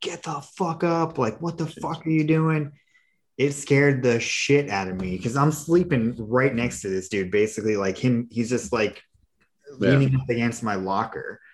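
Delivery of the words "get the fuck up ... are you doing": acted-out, high, loud screaming. Recounting RDCs finding a man beside the rack, retelling a scream. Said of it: "just like started screaming at him".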